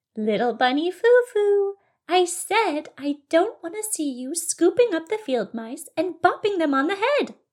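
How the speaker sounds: high, storybook good-fairy-like voice. Narrating a story, the fairy speaks to Little Bunny Fufu, fairy-like voice. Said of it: "said with a fairy-like voice".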